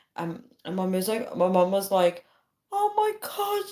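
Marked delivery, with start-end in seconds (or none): 2.7-3.7 mock, very high, frantic, panicked cry. Retelling a scary dream about a serial killer: imitating mom panicking.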